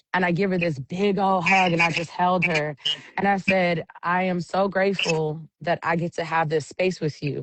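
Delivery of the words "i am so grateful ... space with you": ordinary talk, nothing marked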